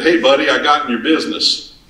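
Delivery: laid-on, exaggerated Texas-Oklahoma accent. Retelling a phone call from Jack and quoting him in Jack's Texas, Oklahoma accent. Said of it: "he's got this wonderful Texas, Oklahoma accent".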